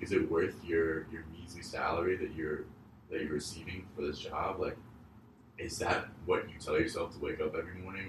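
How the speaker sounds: ordinary talk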